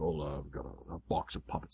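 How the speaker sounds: hushed, soft, gruff, low-key dad-voice mutter. Retelling a booth check, the speaker imitates their dad answering, gruff voice. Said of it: "my gruff dad is kind of like".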